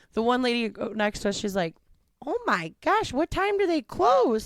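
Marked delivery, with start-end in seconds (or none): 2.2-4.4 very high-pitched Midwestern mother's voice. Retelling a lady at the next table near closing, imitating a Midwest mom. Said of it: "Midwest mom about it".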